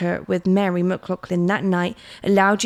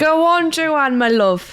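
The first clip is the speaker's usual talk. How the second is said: stretched-out words in a Jamaican accent; 8 semitones higher, 4 dB louder than usual. Cheering on Joanne after a murder is solved, sounding Jamaican. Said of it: "that sounded Jamaican".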